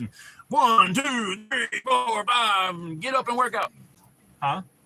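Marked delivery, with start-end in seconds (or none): 0.5-3.7 very high-pitched speech. Imitating how a workout guy counts reps: imitating Bill. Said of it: "He talks like this".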